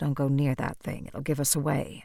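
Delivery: very low, kept-down voice with dropped pitch. Reading a character's warning to her companions: very low voice. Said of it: "say in a very low voice".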